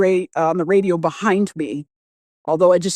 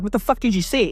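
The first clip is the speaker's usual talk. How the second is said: alarmed, frantic, panicked outburst; 3 semitones higher, 3 dB quieter than usual. Retelling the moment a friend's face turned pale: retelling own panicked words. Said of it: "And I'm in panic mode".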